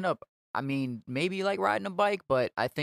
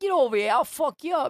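put-on very high, loud Italian New York accent; 12 semitones higher, 6 dB louder than usual. Retelling what a performer said while doing the accent: Italian New York accent. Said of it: "he started doing like the Italian New York accent".

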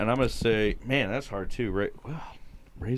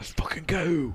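Baltimore accent with raised pitch; 8 semitones higher than usual. Celebrating a Ravens win with the others, in an embarrassing accent. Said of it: "What an embarrassing accent".

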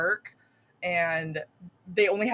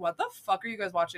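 put-on baffled voice, quieter and faster; 3 dB quieter than usual. Retelling how someone came home during a bad movie, imitating Logan, baffled. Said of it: "Logan came home and he was like".

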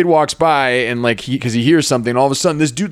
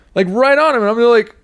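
ordinary delivery

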